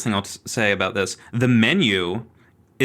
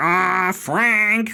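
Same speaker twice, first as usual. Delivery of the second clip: high, angry, fired-off cross delivery; 9 semitones higher than usual. Mocking a parody actress's take on the role, the speaker imitates angry Margaret. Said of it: "she's doing just like kind of angry Margaret".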